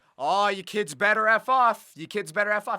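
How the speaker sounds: put-on really strong Australian accent, scolding tone. Retelling a driver yelling at kids from his car, retelling a yell in a strong Australian accent. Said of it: "in a really strong Australian accent too".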